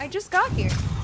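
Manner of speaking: high, loud, outraged yelling.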